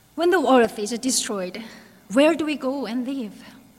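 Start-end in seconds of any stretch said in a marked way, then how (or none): none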